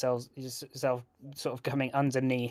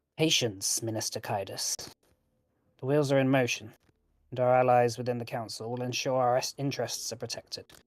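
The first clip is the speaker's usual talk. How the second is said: voice kept slightly lower. As the cloaked stranger answering the minister, keeping voice a bit lower. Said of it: "keeping their voice a little bit lower".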